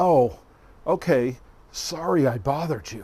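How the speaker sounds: uneasy, awkward, acted sarcastic tone. Retelling a phone call after turning down an invitation, imitating an awkward sarcastic reply. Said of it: "he awkwardly but sarcastically said".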